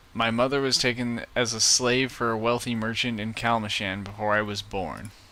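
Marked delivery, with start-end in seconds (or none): none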